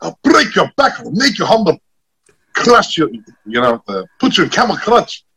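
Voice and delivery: very high, swooping, big wrestling-announcer delivery. Recalling an audition, showing the voice first tried: Sheik wrestling promo voice. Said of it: "the promo voice".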